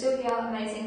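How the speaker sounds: plain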